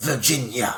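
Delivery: weird overpronounced "Virginia", every syllable heavily enunciated. Imitating the film's dad saying the daughter's name with his pronounced accent. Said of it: "And it's all very pronounced".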